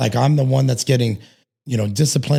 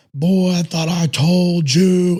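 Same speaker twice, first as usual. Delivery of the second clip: mock army command voice, pitched up; 5 semitones higher than usual. Retelling his father calling to him from down the street, booming army voice. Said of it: "his army voice that he had from being in the army".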